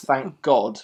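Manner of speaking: ordinary talk, nothing marked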